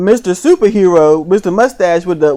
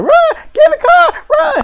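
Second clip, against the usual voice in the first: mock shrill, high, stretched-out, drawn-out yells. Retelling a scene where two people run from zombies: imitating people screaming.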